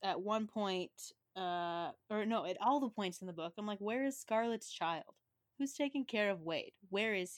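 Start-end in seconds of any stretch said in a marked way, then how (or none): none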